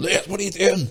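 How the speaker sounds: very high-pitched, shrill, scolding shout. Retelling how the goalkeeper shouted after a dropped ball: imitating Sam shouting. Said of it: "was shouting at him, going".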